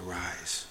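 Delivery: very quiet, gentle, caring, compassionate, tender voice. Guessing how God's command to arise was said: a compassionate 'arise'. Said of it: "My guess is more compassionate".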